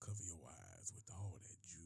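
creepy, hushed low voice.

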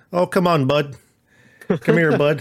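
put-on Canadian accent. Joking about a film character who keeps calling Hiccup 'Bud', put-on Canadian accent. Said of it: "it sounds more and more Canadian".

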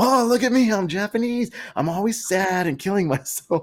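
very high, jeering, mocking put-on voice. Retelling how a guy made fun of a Japanese guy: imitating someone mocking. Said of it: "this Chinese guy is making fun of the Japanese guy".

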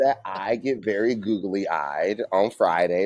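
slow, deliberate repeat. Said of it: "Say it again slowly".

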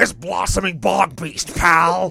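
slow, deliberate wrestling-promoter voice, every word stretched. Reading out a card name when asked to: Vince McMahon voice. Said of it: "do it in the Vince McMahon voice".

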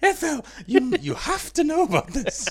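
high, loud, urgent voice, blurted out.

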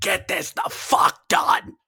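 play-acted, slow, drawn-out mild half-yell. Retelling how Tony yelled backstage with the timer running: imitating Tony screaming. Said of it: "Tony was screaming".

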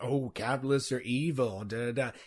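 mock ridiculing tone. Imitating someone making an argument sound ridiculous: imitating a mocking voice. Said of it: "trying to make it sound ridiculous".

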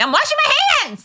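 high-pitched, loud yelling. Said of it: "and I'm like".

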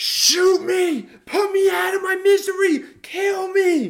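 very loud, very high, shrill, drawn-out wailing scream. Retelling how a person screamed after an injury: imitating someone screaming. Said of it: "He was screaming".

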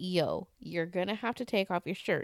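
normal talking voice

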